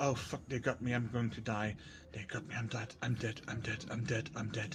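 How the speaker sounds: muttering. Voicing a man just shot in the leg, clutching it, mumbling. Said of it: "mumbling about".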